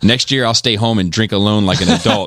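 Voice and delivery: ordinary talk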